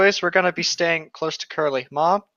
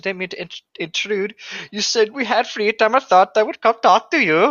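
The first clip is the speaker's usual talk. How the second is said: put-on failed Irish accent, starting out sounding Swedish; 4 semitones higher than usual. Reading a story aloud, voicing the visiting character: bad irish accent. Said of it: "That's not Irish".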